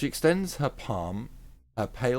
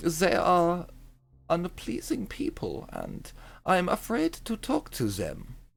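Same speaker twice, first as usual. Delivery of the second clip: bad Scandinavian accent drifting German, slow, sing-song; 7 semitones higher than usual. A player voicing her character in a tabletop game, bad Scandinavian accent. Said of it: "It's more German than Scandinavian".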